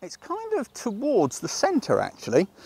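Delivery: very high, squeaky voice with swooping pitch. Looking through a camera viewfinder while framing a shot, in a squeaky voice. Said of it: "he said in a squeaky voice".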